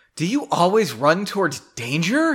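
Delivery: a touch annoyed. Reading a story's line of dialogue aloud, almost irritated. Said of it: "Was that almost irritated? It's not bad, I guess".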